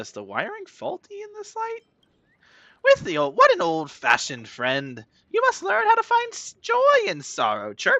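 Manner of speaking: chirpy, very high, swooping bird voice. Playing a bird character who ends lines with chirp, in a chirpy bird voice. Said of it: "I like my bird voice".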